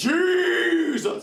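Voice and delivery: theatrical, dramatic, very high and drawn-out delivery. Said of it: "why am I talking to him like this?".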